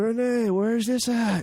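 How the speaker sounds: very slow, high, drawn-out yell. Acting out someone at home yelling a question to another room: imitating someone yelling. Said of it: "I can just yell".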